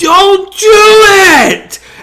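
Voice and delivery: very high, loud, piercing shriek, drawn-out it. Retelling a scene where a character screams a warning: imitating a scream. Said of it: "he screams".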